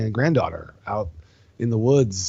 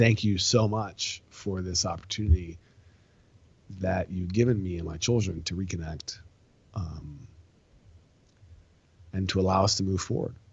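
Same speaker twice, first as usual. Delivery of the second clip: mock crying, choked-up and tearful; 3 semitones lower, 4 dB quieter than usual. Retelling a widowed mother's thanks for reconnecting with her children, imitating her choked-up crying. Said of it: "she's choking up and she's crying".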